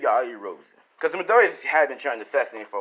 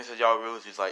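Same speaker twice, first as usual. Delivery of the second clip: plain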